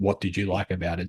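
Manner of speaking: ordinary talk, nothing marked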